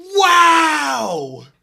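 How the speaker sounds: huge, shrill, very loud, soaring, drawn-out call. Imitating a commentator's call of a great catch: loud Joe Buck impression. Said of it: "This is exactly what he sounds like".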